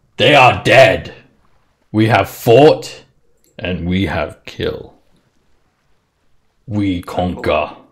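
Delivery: loud, in-character frost giant warlord voice. Voicing a frost giant answering where the townsfolk are: frost giant voice. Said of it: "Frost Giant".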